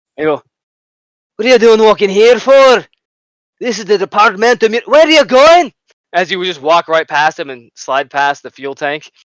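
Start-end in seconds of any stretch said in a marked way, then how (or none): 1.4-5.8 put-on Irish accent, loud, high, challenging. Voicing the Rattling guards questioning a player: Irish accent.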